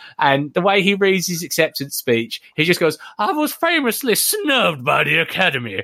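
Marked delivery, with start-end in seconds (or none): 3.2-5.8 put-on high voice with swooping, swinging pitch. Retelling an acceptance speech line: Adam Sandler voice. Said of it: "he's Adam Sandler voice".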